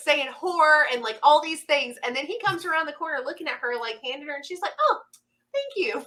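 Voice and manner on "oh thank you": mock, very high, switched-on customer-service politeness. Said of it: "she turned the customer service switch super fast".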